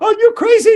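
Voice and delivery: shouting. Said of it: "the daughter was yelling".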